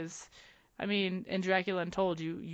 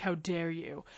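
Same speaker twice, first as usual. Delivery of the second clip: mock ironic, sarcastic indignation. Acting out a reply to a history spoiler: sarcastic outrage. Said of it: "I would probably sarcastically be like".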